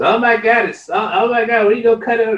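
very high, mocking, sarcastic, fussy alarmed outburst.

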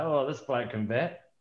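side-of-the-mouth mutter, quiet, under the breath. Retelling what a teammate said during a trial: imitating someone muttering. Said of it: "muttering under his breath out the side of his mouth".

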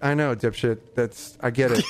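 ordinary talk, nothing marked

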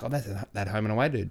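ordinary talk, nothing marked

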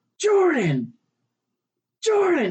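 very high call, pitch swinging up and down. Retelling how a woman yelled for jordan in the night, retelling a yell. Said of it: "she had to yell Jordan like 3-4 times".

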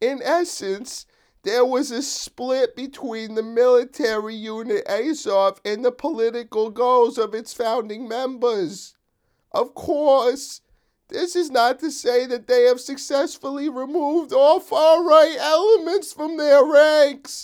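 grating, high put-on voice. Reading aloud a statement from the ADL in a grating mock voice. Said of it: "I'm going to read it like this".

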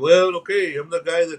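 normal talking voice

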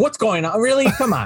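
put-on, mad, angry outburst. Retelling a movie scene, imitating a mom who gets mad: imitating an angry mom. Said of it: "gets all mad".

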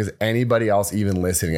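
ordinary delivery

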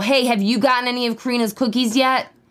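play-acted, lively hawker-style calling out. Speaker acts out people singling out individuals in a crowd, retelling people yelling. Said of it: "they weren't just yelling at the crowd".

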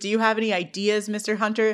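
ordinary talk

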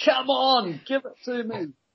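very high, drawn-out, defiant taunting roar. Retelling a movie scene of a man on a boat mast, imitating someone yelling at a storm. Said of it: "yelling out".

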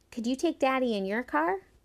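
spoken with pride. Narrator reading Batty asking Iantha a favor, spoken proudly. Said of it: "She stood tall and spoke proudly".

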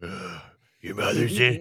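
slow, growling put-on voice. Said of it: "I was doing a Batman impression".

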